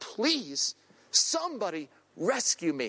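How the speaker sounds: slow, desperate, pleading cry, acted out. Retelling a friend's cry for help in the waves: imitating a desperate cry for help. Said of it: "In desperation, he's crying out".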